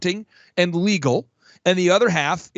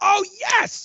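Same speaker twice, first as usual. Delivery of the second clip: creature voice, very high, greedy and possessive; 3 dB quieter than usual. Speaker talks about how entrepreneurs feel about gross revenue, doing a Sméagol impression. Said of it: "it's almost like like like a Smeagol".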